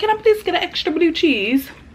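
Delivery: amateur, put-on, wannabe British accent. Retelling their own order at Wingstop, in a wannabe British voice. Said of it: "That's my wannabe British voice".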